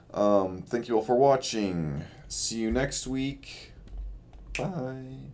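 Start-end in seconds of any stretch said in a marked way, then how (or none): 2.3-5.2 soft, slow delivery with the voice cracking. Speaker signing off to viewers at the end of a video, voice cracking. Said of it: "terrible voice crack".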